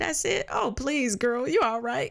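high, breezy, reassuring, dismissive tone.

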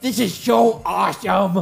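put-on kid voice screaming. Game master voicing the kid Gilroy, who gives Griffin a thumbs up, Gilroy screaming. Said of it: "he screams".

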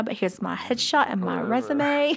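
put-on poor Australian accent that drifts into cockney. Retell what she told the Street Profits backstage, as Billie in a bad, slightly cockney Australian accent. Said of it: "It's getting a little cockney there".

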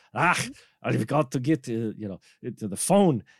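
put-on botched, half-hearted Scottish accent. Retelling a film character's lines: failed Scottish accent. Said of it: "that's not even a Scottish accent".

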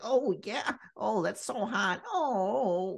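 high nerdy voice, each oh drawn out. Describing a sex scene, the speaker imitates a man doing the Steve Urkel voice. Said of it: "doing like the Steve Urkel voice".

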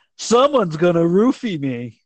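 mock voice, blurted out loud. Quoting a woman sitting with the bride on a night out: retelling loud talk. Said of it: "she would just loudly say out loud".

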